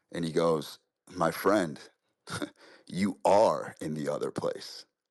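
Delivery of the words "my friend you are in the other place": slower, mock-deadpan delivery. Retelling a story's ending, the speaker quotes the guide's reply, retelling a deadpan line. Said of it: "he looks at him deadpan right in the pupils".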